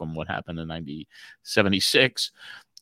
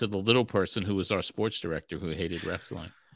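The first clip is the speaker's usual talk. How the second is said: ordinary talk, nothing marked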